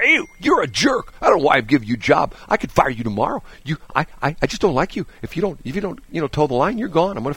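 put-on nasty, high-pitched ranting voice. Mocking how a TV host treats staff off camera: imitating Ellen being nasty. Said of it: "And then she gets off here".

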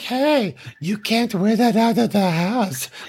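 put-on high-pitched, little, creepy baby voice. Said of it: "having this little creep baby voice".

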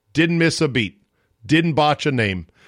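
normal talking voice

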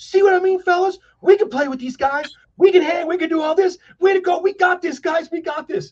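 play-acted very high, fast, thrilled hype talk. Telling a story about a young teammate who got all excited: imitating an excited teammate. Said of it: "He's all excited".

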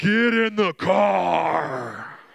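very loud, very slow, sinister evil voice. Retelling what they heard next, in the most evil voice imaginable. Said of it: "In this the most evil voice you can imagine".

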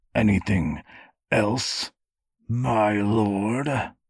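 words forced out through clenched, gritted teeth. A man asks his lord if there is anything else, through clenched teeth. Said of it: "Raymond asked through clenched teeth".

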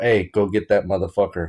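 normal talking voice

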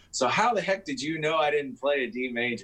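cheery, all-happy, cheerful teacher voice. Retelling what he said after closing the door, imitating someone sounding happy. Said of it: "Like all happy".

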